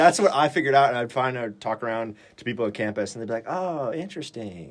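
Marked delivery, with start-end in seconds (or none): 3.5-4.7 put-on Minnesota accent, hushed, pitched up, passive-aggressive. Describing how people at campus reacted, imitating minnesota passive-aggressive. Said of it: "more like Minnesota passive aggressive".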